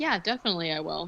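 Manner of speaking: casual, unbothered, very nonchalant, offhand tone. Retelling how the lawyer agreed to investigate: imitating a nonchalant reply. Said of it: "very nonchalant".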